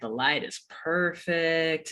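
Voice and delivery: put-on smooth, soft, cool and suave delivery. Retelling a man at the storm door checking the planets, imitating his cool, suave voice. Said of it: "in like his kind of cool, suave voice".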